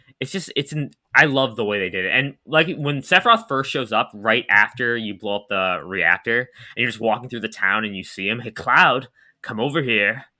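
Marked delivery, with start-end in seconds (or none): 8.4-10.2 evil villain voice, pure evil. Recalling a game villain's first appearance in town, doing Sephiroth's evil voice. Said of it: "he says it with that that that like evil voice of his".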